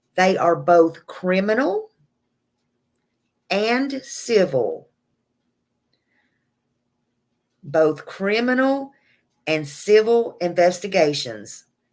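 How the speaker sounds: slow, deliberate, emphatic speech. Making sure viewers get a point in a case: speaking slowly. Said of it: "I say this slow because I want you to get it".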